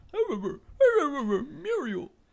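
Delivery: very high, loud, swooping cartoon voice. Playing an impressions guessing game: Courage voice. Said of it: "that's my favorite impression of all time".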